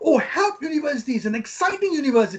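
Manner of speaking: eager, lively, excited, enthusiastic tone. Showing how to present your university, said excited and enthusiastic. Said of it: "That's how you should show your enthusiasm".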